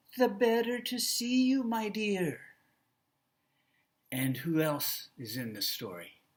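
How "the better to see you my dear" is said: put-on elderly grandmother voice, pitched up. Showing listeners how Grandma in the story talks: old grandma voice. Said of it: "she probably sounds old".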